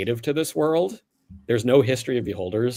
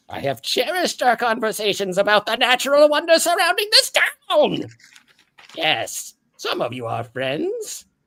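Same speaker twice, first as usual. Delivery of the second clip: put-on monster voice, higher; 13 semitones higher, 3 dB louder than usual. Voicing the beholder Gregory greeting Clancy: Gregory the beholder voice. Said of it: "he looks at the rest of the wagons and he goes".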